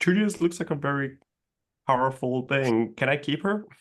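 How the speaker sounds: loud, garbled speech through full mouth while chewing. A player's character speaks while eating, talking with mouth full. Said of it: "Like with my mouth full".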